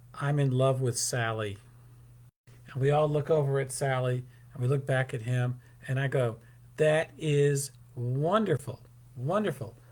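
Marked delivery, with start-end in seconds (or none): none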